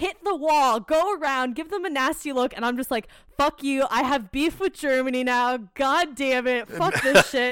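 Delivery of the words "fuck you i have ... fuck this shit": ordinary delivery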